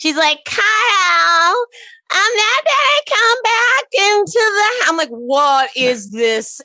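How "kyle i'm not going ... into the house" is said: put-on very high babyish voice, name drawn out long. Retell the cringe moment when she spoke to Kyle, imitating Lindsay's baby voice. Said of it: "Lindsay with the baby voice again".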